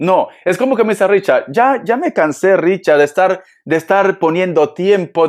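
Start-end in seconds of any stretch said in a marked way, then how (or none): none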